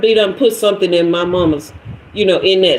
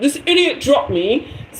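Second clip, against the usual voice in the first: poor, failed fake British accent; 6 semitones higher than usual. Retelling what she said to people after she fell, in a bad British accent. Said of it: "However they say it, I can't do it".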